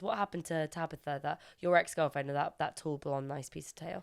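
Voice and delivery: ordinary talk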